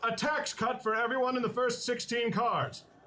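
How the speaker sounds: high, booming, declaiming voice. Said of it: "And I boom out".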